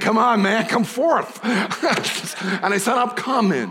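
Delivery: put-on casual, relaxed New York accent. Retelling how Jesus spoke in New York City, Jesus in a New York accent. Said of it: "Jesus spoke to me in a New York accent".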